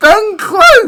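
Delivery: voice cracking. Reacting as a player scores a hat trick in career mode, voice cracking. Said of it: "What the hell was that voice crack?".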